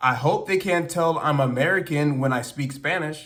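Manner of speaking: ordinary delivery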